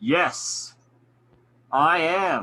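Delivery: loud, booming, magically amplified-sounding voice. Player's character speaking in Goblin with a spell-boosted voice, booming loud voice. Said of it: "make my voice even louder, and have it boom".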